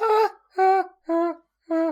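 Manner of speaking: very high, very loud falsetto ah-ah-ah scream. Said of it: "let's run that back".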